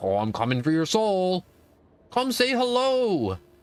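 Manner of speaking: put-on monster character voice. Joking about a constant threat stalking the player: imitating Bendy. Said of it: "Bendy's gonna be like".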